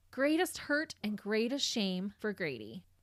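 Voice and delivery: plain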